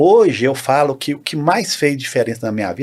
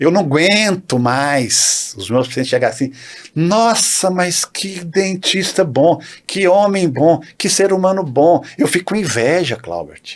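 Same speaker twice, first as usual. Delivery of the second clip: slow, teasing, play-acted grumble said in jest; 3 semitones higher than usual. Retelling what a colleague says: imitating a colleague complaining jokingly. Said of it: "Mas fala brincando".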